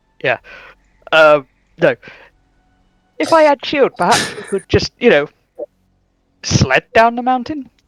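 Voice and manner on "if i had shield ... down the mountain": put-on, vague, mixed multinational European accent. Playing a character, suggesting the party sled down: put-on european accent. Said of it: "it is a European accent".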